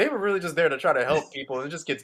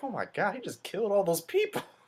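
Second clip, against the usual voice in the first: play-acted laughing through the words, pitched up; 5 semitones higher, 8 dB quieter than usual. Retelling what a friend next to them said during a movie: imitating a friend laughing while talking. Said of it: "just laughing".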